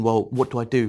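usual speaking voice

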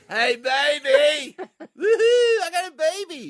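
put-on very high, loud, tipsy drunken scream. Denying coming home drunk, acting out stumbling through the door: mock drunken screaming. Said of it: "stumbling through the door screaming out".

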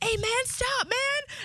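high-pitched yelling.

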